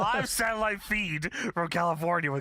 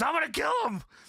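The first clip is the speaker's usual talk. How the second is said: high, wild, unrestrained yell; 10 semitones higher than usual. Retelling how Sting flips a table: imitating Sting yelling. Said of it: "flips the entire table over and yells".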